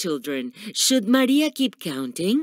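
ordinary delivery, nothing marked

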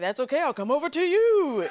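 overdone, exaggerated, high, swooping sing-song voice. Retelling what a magician said on coming over: exaggerated David Blaine impression. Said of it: "That's not his voice. I'm making him way more".

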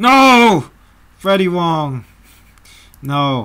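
high, loud, dismayed outcry.

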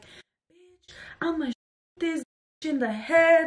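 high, stretched-out, acted, crazed wild ranting. Retelling a fight, the speaker acts out a girl yelling at them: retelling crazy yelling. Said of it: "literally yelling like crazy".

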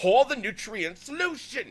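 very high, very loud, furious angry yell. Describing a scene, the speaker mimics a disembodied voice yelling orders: imitating an angry male voice. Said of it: "there's this angry male voice going".

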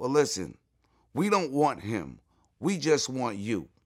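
ordinary talk, nothing marked

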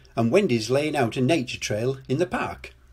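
plain

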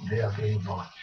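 put-on low, soft Swedish-accented voice. Recounting a visit, speaker quotes a man who looked back at them: swedish accent. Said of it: "in his Swedish accent".

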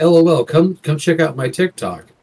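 robotic, synthetic text-to-speech chat voice. Mimicking him plugging his TikTok again, in a robotic text-to-speech voice. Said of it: "In the robotic chat voice".

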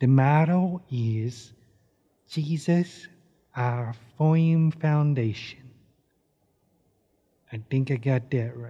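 slow, very quiet, under-the-breath murmur. Practicing the motto so the listener won't hear: really quiet voice. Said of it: "I'll practice in a really quiet voice".

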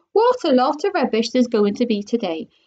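ordinary delivery

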